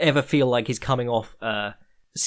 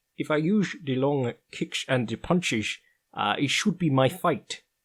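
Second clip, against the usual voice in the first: put-on Dutch accent; 2 semitones higher than usual. Recapping a fight and quoting the promo footage, Stefan Struve Dutch impression. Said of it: "That is my Dutch impression".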